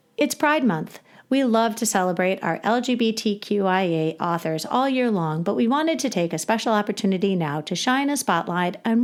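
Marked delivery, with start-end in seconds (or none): none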